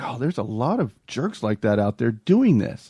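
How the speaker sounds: ordinary delivery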